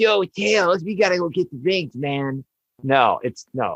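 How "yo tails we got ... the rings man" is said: higher, slow, drawn-out teenage cartoon voice. Contrasting with how Sonic sounds now: teenage Sonic voice. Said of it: "Not like".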